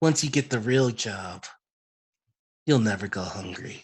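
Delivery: hushed, whispering voice. Voicing a winged woman handing a player their serum: whispering. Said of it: "and she whispers".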